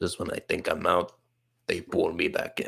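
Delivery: bad, low, creaky, raspy mobster voice, very hushed. Comparing a game moment to a film, speaker does The Godfather impression. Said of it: "That was a terrible impression".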